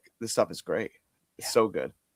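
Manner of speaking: ordinary talk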